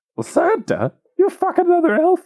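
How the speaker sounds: very high puppet voice, wildly swooping pitch. In an improvised Christmas scene with Miss Claus, in a Miss Piggy voice. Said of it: "That was Miss Piggy".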